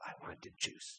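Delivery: barely voiced, hushed, quiet whisper. Retelling how a child first asked for juice: quiet. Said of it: "it went from just a quiet".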